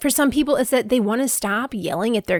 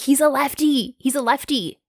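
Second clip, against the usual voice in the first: very slow, deliberate, pointed delivery; 3 semitones higher than usual. Retelling yelling at the coach behind home plate: retelling a yell. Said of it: "yelling at the coach who was behind home plate".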